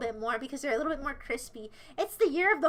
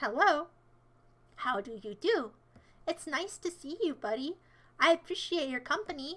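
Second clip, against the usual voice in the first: put-on fake sweetness, quieter; 4 dB quieter than usual. Switching to politeness after asking if being sassy: put-on sweet manner. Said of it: "I'm gonna be sweet now".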